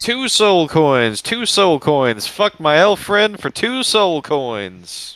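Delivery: full-on, repeated, high-pitched screaming. In a tabletop game, a player's character starts screaming. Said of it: "start screaming".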